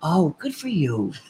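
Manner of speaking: mock condescending tone. Imitating how people react to a smaller podcast platform: mock condescending tone. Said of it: "It's very condescending".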